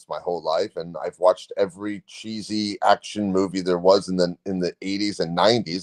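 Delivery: ordinary delivery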